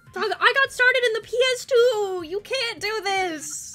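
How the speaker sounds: loud yelling, shouting. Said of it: "Why are we yelling?".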